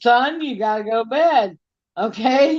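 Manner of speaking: slow, motherly scolding voice. Speaker retells telling Johnny to go to bed, imitating a mom. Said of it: "I just say it like a mom would".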